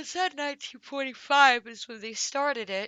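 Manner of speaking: loud, high words said through a yawn. Reading through a case history aloud while tired, yawning. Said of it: "Excuse me, I'm yawning".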